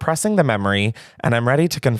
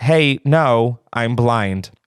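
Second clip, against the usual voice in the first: mock calm, very slow, unhurried delivery. Retelling what a blind man answered after being yelled at, retelling a calm reply. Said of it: "He calmly said".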